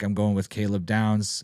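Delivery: ordinary talk, nothing marked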